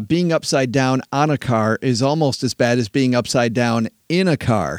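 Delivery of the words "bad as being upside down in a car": ordinary talk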